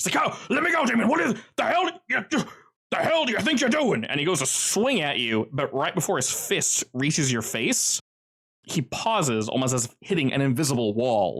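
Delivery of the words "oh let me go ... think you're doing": frantic, very high, fast panicked shrieking scream. Voicing a character who wakes and panics: screaming in panic. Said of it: "starts screaming".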